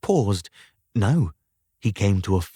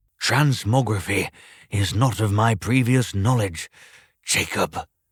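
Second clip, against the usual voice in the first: ordinary delivery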